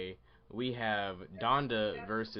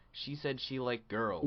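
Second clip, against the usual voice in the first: usual speaking voice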